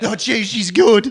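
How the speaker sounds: high, loud, drawn-out, cracking voice. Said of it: "His voice is breaking".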